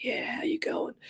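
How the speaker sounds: husky, breathy, hushed, very quiet murmur. Describing a voice with throat issues, husky Godfather voice. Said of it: "I hear a husky voice like".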